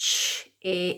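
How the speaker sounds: slow, drawn-out word. Showing a class how to say a word for spelling: saying the word slowly. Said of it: "Let's say it slowly".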